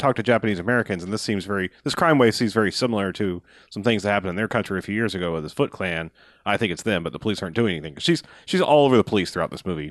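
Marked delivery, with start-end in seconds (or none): none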